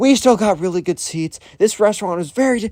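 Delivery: put-on high, scolding yell. Retelling a mother scolding her daughter, imitating someone yelling. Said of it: "yelling at".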